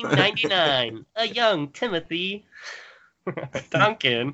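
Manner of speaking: put-on old-timey nineteen-twenties voice. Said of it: "Just use that voice".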